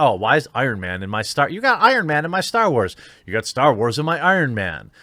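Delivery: plain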